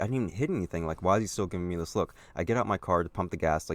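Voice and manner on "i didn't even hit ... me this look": plain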